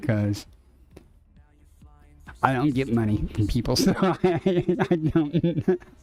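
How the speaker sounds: talking with words broken up by laughter. Explaining where donations go, laughing while talking. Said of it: "I'm sorry, I'm laughing".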